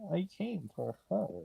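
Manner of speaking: rough, creaky, raspy voice, pitched slightly up. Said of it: "it just sounded like Bane on my end".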